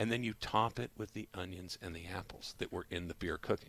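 voice dropped to hushed, very quiet. Explaining a hot dog recipe step to a listener, in a lowered voice. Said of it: "your voice got lower".

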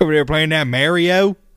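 put-on rural Southern-style accent. Discussing how to pronounce Polybius, talking in a redneck accent. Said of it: "sounds like a redneck to me".

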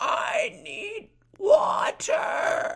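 put-on bad cartoon voice. Retelling a favorite episode scene, bad SpongeBob impression. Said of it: "Sorry about that bad impersonation".

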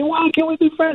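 high-pitched, rising voice.

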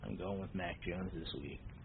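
put-on voice, very low, soft, mumbled.

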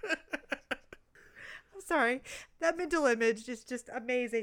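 laughing so hard it turns to crying. Reacting to a funny story the other speaker is telling, laughing so hard crying. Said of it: "i'm laughing so hard i'm crying".

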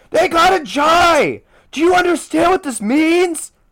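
very high-pitched shout, drawn out. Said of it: "You're yelling so loud right now".

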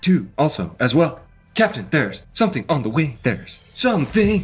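dramatic delivery, mid-line pause, swooping pitch. Doing an impression with pauses as asked: Jim Carrey doing William Shatner. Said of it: "an impersonation of Jim Carrey doing an impersonation of William Shatner".

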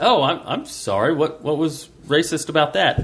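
ordinary talk, nothing marked

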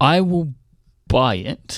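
halting, wavering, hesitant speech. Asked by another speaker whether he'll buy the iPad, answering: hesitant. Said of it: "Listen to that hesitation in your voice".

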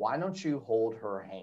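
very soft, very quiet, half-whispered aside. Retelling what a mother said in the theater: imitating someone half-whispering. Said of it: "my mother whispers to me".

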